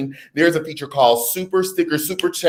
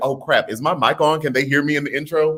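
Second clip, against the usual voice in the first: ordinary talk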